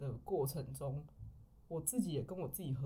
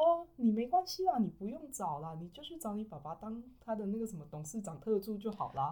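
flippant, giggly, jokey teasing tone, pitched up; 5 semitones higher than usual. Retelling a distant relative's remark about job hunting: imitating a joking, laughing tone. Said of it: "用嘻嘻哈哈的语气跟我讲说".

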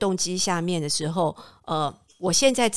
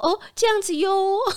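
very high, adorable, cute little voice; 13 semitones higher than usual. Speaker imitating how the person they describe always talks, in a cute voice. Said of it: "他用一个很可爱的声音讲话".

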